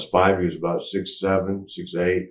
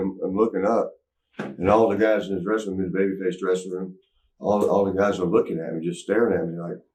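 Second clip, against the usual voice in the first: ordinary delivery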